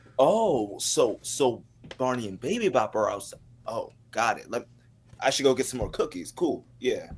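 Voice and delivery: heavily sarcastic, mock-agreeing tone. Describing a home video gag, the speaker acts out the parents, imitating a sarcastic parent. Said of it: "sarcasm from the parents".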